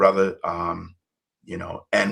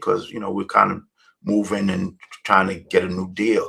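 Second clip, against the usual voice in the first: normal talking voice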